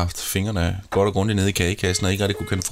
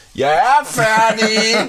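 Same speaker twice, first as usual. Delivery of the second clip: very high, loud called-out yell; 14 semitones higher, 7 dB louder than usual. Speaker recalls calling out from the toilet when done, retelling a shout. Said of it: "så lige så råbte jeg".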